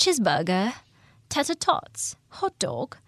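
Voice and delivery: swooping put-on British accent done jokingly. Retelling a movie knight reading a diner menu, imitating a British accent. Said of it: "He's supposed to have the British accent".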